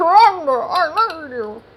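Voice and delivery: terrible, slow, high, very drawn-out mouthful-of-bread voice. Imagining what a character would say, in a terrible bread-in-mouth impression. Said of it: "a terrible impression of having bread in your mouth".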